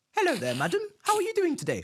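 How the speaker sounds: very high, sing-song, polite professional phone voice. Imitating a mum answering the phone right after scolding: imitating a polite phone call voice. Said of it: "a phone call voice".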